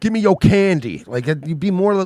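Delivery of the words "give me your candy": mock threatening robber voice, higher and louder. Joking about a gunman robbing a ten-year-old: imitating a robber threatening a kid. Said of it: "Pulling a gun on a ten-year-old and be like".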